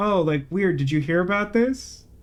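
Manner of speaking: put-on under-breath mutter. Recalling how he mentioned it in passing, retelling an offhand mutter. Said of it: "like he heard like a like a weird anecdote".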